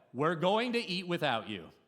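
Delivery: play-acted high, carrying shout. Retelling calling to a son who won't come: imitating own yell. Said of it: "And so I yell".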